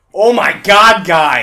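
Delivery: very loud outburst, dragged out and drawn out. Retelling how the other speaker reacted while reading a guide: imitating the other speaker, louder. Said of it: "me impersonating you just makes it so much louder".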